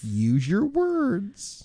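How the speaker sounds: put-on very slow, high, drawn-out, patronizing coaxing baby-talk tone.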